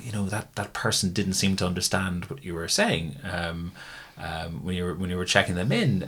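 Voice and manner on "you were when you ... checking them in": ordinary talk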